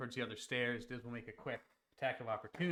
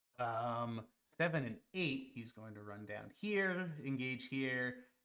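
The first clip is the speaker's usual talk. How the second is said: ordinary delivery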